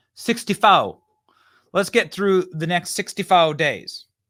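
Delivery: laid-on fake Quebec accent. Mocking a politician's new accent heard in a clip: imitating Kamala Harris's accent. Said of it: "is that the accent of Quebec?".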